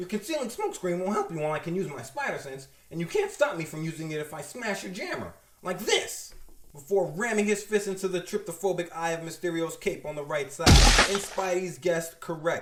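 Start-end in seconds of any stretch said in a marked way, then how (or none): none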